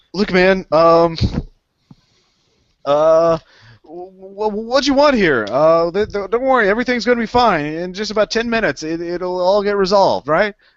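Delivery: very high, frightened, cowering, nervous stammer. Voicing a frightened man after being intimidated: cowering and stammering. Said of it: "he cowers a little bit".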